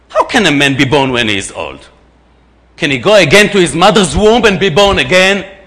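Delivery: loud, dripping sarcastic tone. Reading a question aloud to listeners as Nicodemus, sarcastic. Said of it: "Actually being sarcastic".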